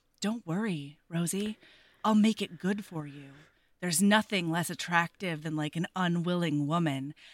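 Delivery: put-on whisper. Retelling a book scene where he whispers in her ear: imitating a whisper. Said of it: "he whispers in her ear".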